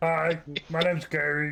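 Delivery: not-too-bright, dopey, dim-witted voice, pitched slightly up. Voicing Gary, not the brightest in the shop, greeting a player: dim-witted Gary voice. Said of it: "Gary is not the brightest in the shop".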